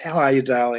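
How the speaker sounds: mock-loving, put-on lovely affectionate voice. Remembering how Vanessa always greeted people, imitating her loving greeting. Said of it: "It was just full of love".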